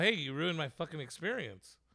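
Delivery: ordinary delivery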